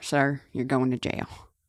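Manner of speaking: put-on country accent. Trying out a line for fun, speaking in a country accent. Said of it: "it's like a country accent".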